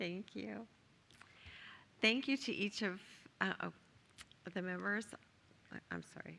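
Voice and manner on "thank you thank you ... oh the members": choked up, voice breaking and catching. Thanking fellow board members after their kind words, choked up. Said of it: "Getting choked up too".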